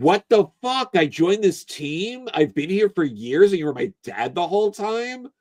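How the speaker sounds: acted high, freaked-out meltdown, losing it. Acting out a character who learns a teammate was his dad: imitating a meltdown. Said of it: "having a genuine meltdown about it".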